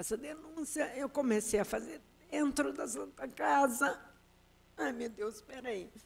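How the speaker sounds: crying while talking. Explaining her complaint against the Santa Casa, crying while talking. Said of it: "Só que eu paro de chorar".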